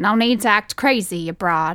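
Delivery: ironic, put-on old-fashioned old-timey voice. A man holding the narrator close speaks to her ironically, in an old-timey voice. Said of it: "He said it in an old-timey voice".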